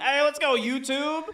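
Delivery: excited, very high-pitched thrilled call-out. Speaker cheering on YouTube viewers after noticing a new hearts feature, excited. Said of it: "Sorry, I'm getting excited".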